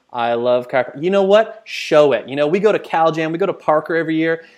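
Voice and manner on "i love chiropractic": level, lifeless, flat droning monotone. Showing what not to do behind the camera: flat monotone. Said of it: "talking monotone".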